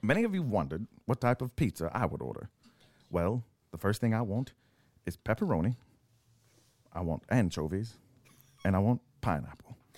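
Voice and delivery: assumed narrator voice. Imitating a pizza order for laughs: bad Morgan Freeman impression. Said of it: "in Morgan Freeman voice".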